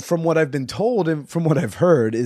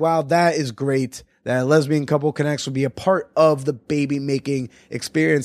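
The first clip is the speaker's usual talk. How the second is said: usual speaking voice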